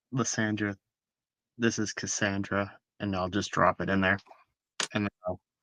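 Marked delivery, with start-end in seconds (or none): 0.1-2.7 murmured quietly under the breath, quieter. Dropping gold pieces in while in character: murmured under the breath. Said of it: "murmur it to myself".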